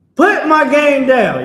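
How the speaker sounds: very high, very loud, shrill, drawn-out yell. Coaching someone on how to shout at a person holding their game, yelling. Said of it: "You're gonna yell and tell them".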